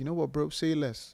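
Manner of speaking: put-on roadman slang. Acting out how roadmen talk to him, in a roadman voice. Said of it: "imagine when like roadmen are trying to talk to me".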